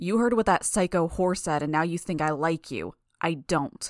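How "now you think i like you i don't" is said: ordinary delivery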